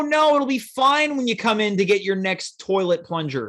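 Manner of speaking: ordinary talk, nothing marked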